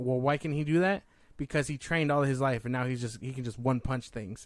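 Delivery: ordinary talk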